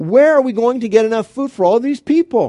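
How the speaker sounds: stunned, incredulous tone.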